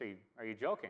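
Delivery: ordinary talk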